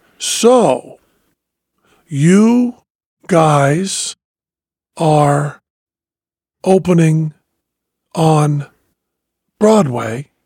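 slow delivery with long pauses. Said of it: "That was the speed Letterman was talking".

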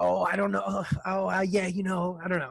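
mock nervous, anxious stammering, fumbling speech. Imagining the other speaker's inner dialogue on a date: imitating nervous, anxious stammering. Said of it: "picturing what your inner dialogue would be".

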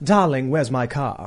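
put-on non-rhotic British accent with dropped R's. Illustrating how people would talk in that British accent: British accent, dropped R's. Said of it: "So the R's were basically dropped".

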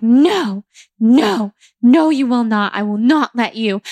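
acted-out screaming. Retelling refusing to let the facilitator carry them out: retelling a scream. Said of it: "screaming for a full 30 minutes".

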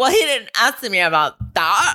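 affronted, indignant tone. Imitating what a woman on the show would say if challenged: imitating her indignant voice. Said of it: "That's my new voice for her".

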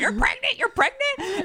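mock very high, frantic, overexcited freak-out. Retelling hearing the pregnancy news: retelling own freak-out. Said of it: "freaking out".

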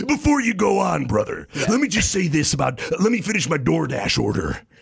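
pushy, barrelling salesman patter with no pauses. Doing an impression of Hulk Hogan talking over someone: Hulk Hogan impression. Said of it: "Hulk Hogan, he always sounds like".

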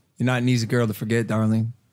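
put-on attempt at an American accent. Showing how the line sounds when said his own way: American accent. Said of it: "I tried to say it in an American accent".

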